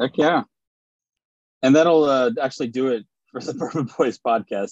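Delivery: chuckling, laughing through the words. Podcast host signing off the bourbon boys podcast, laughing at his own silliness. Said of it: "I'm laughing at my silliness".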